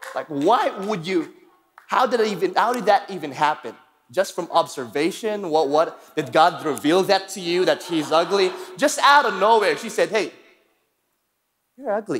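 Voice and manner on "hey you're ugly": put-on sugary, sweet, friendly-sounding tone. Retelling what a girl said to another leader during a selfie, imitating a sweet tone. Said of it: "in a sweet way".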